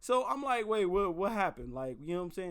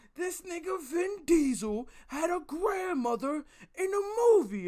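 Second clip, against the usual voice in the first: put-on scream, much higher, louder; 9 semitones higher, 3 dB louder than usual. Speaker retells a man ranting in public, imitating someone screaming. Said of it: "screaming about grandmothers and shit".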